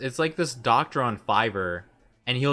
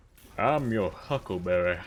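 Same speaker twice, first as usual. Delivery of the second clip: put-on deep Southern accent, lower; 4 semitones lower than usual. Speaker quoting a character's catchphrase, in McCree voice. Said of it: "in like a McCree-like voice or just like a deep Southern accent".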